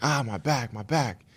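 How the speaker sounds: high, drawn-out, pained scream. Recounting waking up in an ambulance: retelling a pained scream. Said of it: "I was just screaming like".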